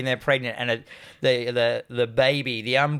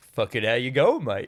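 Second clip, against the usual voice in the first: put-on casual, friendly voice. Retelling a film scene where Ironside greets Cameron: imitating Ironside as a casual normal dude. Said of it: "He just sounds like a normal dude".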